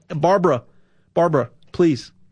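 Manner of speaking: earnest, imploring, begging plea. Addressing a listener directly about gold: begging. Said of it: "I'm really begging you here at this point".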